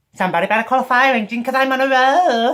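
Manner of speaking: shrill, booming character voice, screeched high and loud. Ending a video by trying out impressions: Junkrat impression. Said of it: "that's my Junkrat impression".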